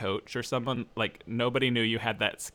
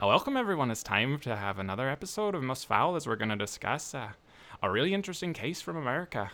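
put-on Irish accent sustained all the way through; 2 semitones higher than usual. Trying out the Most Foul podcast welcome, in an Irish accent. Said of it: "try Irish".

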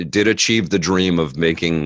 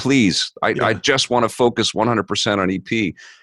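put-on almost tearful pleading, higher; 5 semitones higher than usual. Retelling calls to a wife from a work shift, begging to quit: imitating a near-tearful plea. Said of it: "almost in tears".

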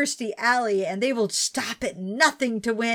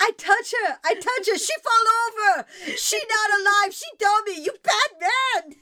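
mock yelling, much higher pitch; 11 semitones higher than usual. Retelling how a woman chewed him out over a dummy: retelling a yell. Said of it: "yelling at him about this dummy".

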